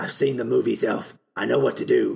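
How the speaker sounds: rough, creaky, raspy cartoon-superhero voice. Speaker quoting what Wolverine says, doing the cartoon Wolverine voice. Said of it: "Now that I'm trying to sound like the cartoon Wolverine".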